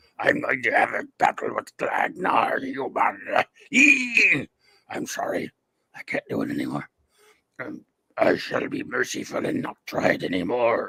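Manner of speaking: hushed, breathy, whispered reptile alien voice. Speaking as the Gorn before giving up a battle, Gorn impression. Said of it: "I love your Gorn impression".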